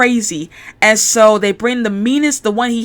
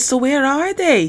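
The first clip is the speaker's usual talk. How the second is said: attempted thick, strong British accent; 4 semitones higher than usual. Retelling a scene from a show, attempting Dave Lister's accent. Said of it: "I'm trying to do Lister's accent".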